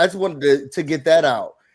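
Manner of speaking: ordinary talk, nothing marked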